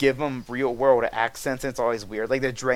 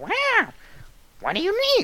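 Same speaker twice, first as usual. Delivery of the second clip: squeaky, very high goblin voice, swooping. Describing the playable goblins' sound emotes in the game, high-pitched goblin voice. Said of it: "they always kind of had these sort of high-pitched voices".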